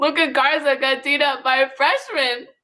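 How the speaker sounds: speech broken up by laughter. Telling viewers a sports result and asking them to comment, laughing while talking. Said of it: "I'm doing a lot of laughing".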